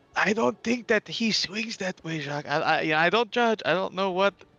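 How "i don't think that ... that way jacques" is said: whisper, much higher. Player character speaks aside to a companion at a shop counter, whispering. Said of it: "I whisper to Jacques".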